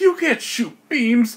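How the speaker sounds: high, slow, loud indignant outburst. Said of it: "And Argomon is like".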